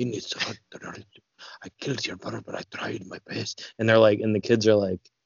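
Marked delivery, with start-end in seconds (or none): 0.0-3.7 Scottish brogue, barely a whisper. Viewer retelling a film scene watched without subtitles; whispered Robert Carlyle Scottish impression. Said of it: "on top of his Scottish brogue, is whispering".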